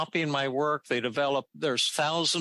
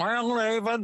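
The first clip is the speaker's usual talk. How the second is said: put-on New York twang, pitched up; 9 semitones higher than usual. Retelling a man's reply when asked if he gets angry: imitating a New York twang. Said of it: "He had that New York twang".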